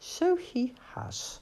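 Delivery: drowsy, half-awake murmur, pitch lifted slightly. Rat answers Toad as Captain Beaky snores, a sleepy murmur. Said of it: "murmured Rat".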